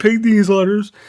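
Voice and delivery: ordinary talk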